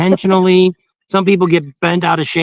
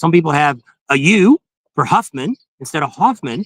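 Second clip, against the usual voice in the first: ordinary talk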